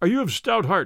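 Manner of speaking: ordinary talk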